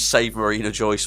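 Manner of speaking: normal talking voice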